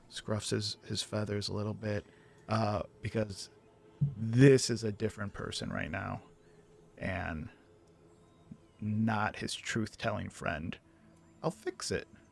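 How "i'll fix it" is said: desperate, high-pitched, breathy whisper. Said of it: "His voice went up in pitch".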